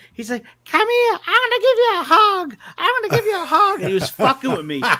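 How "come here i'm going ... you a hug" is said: put-on very high, squeaky child voice. Retelling a kid in a Jason mask talking trash to him, squeaky kid voice. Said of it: "He's got a real squeaky voice".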